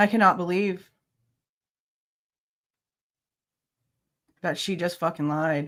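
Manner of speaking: angry, pissed-off, disbelieving outburst. Reacting to learning that she just lied: angry. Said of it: "I'm mad".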